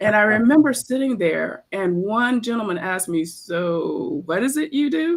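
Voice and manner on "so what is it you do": very slow, drawn-out, snarky sarcastic tone. Recalling a gentleman questioning their resume, the speaker quotes him: imitating a snarky, sarcastic question. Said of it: "In like a very snarky and sarcastic way".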